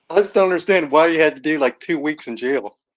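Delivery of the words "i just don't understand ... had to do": usual speaking voice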